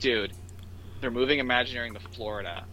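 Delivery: ordinary delivery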